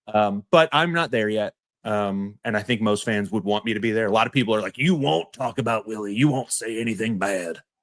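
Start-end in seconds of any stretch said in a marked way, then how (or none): 4.7-7.5 over-the-top, exaggerated put-on trailer-park character voice. Quoting what many people say about Willie: trailer park voice. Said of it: "I just did like a trailer park voice".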